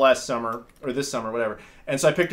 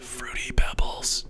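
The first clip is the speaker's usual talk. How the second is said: soft whisper into the microphone. Speaker whispers a word into the microphone for the listeners, whispered. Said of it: "I'll just whisper it into the microphone".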